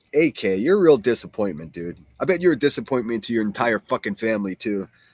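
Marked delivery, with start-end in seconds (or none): none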